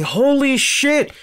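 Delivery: shrill, shocked, stunned scream. Retelling seeing a fan attack Bret Hart on screen: retelling own loud scream. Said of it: "And I scream real loud".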